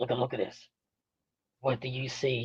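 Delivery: very quiet, hushed voice. Retelling what Jake Roberts said at a signing: Jake Roberts impression. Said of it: "He did just like this".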